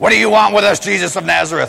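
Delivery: rough, creaky, possessed, demon-ridden voice. Like a tormented man in a crowded hall suddenly screaming at a stranger he fears, his voice twisted and snarling with dread. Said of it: "That's my best possessed voice".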